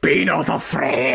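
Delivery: extremely demonic voice, rough and creaky. Speaker acts out an angel coming down to speak, most demonic voice ever. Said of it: "In the most demonic voice ever".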